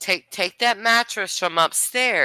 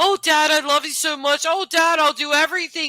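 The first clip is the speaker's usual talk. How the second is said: put-on high, tearful, pleading sobbing; 8 semitones higher than usual. Commenting on a video, acting out a daughter's words to her arrested father, imitating someone crying. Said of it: "She's crying".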